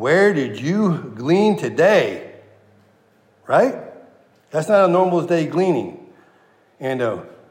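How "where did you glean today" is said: amazed, wondering, expressive inflection. Showing how to read a character's question aloud, with a little inflection. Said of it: "read it with a little inflection".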